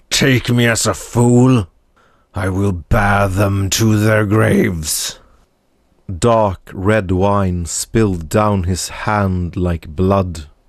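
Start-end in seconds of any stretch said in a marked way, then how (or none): 0.1-5.2 rumbling growl, boiling with hate. As everyone looks away, the lord vows revenge; hate-filled Lord Pharrells voice. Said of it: "Lord Pharrells spread his gnarled hand on the table and stood, domineering the room as if he had grown twice as tall. His other hand still clutched his silver goblet of wine. / Lord Pharrells spread h".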